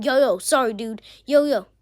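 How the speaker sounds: put-on mean-sounding tone. Retelling what a bully said to a kid: imitating a mean tone. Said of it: "says in, like, a mean tone".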